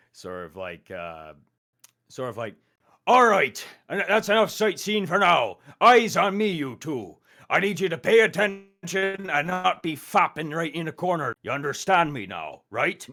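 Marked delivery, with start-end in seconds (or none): 3.0-13.0 put-on Irish accent, higher and louder. Showing the voice used for a game's instructor: swarthy Irish Hagrid-sounding voice. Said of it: "a sort of swarthy Irish Hagrid sounding voice".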